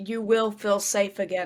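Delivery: normal talking voice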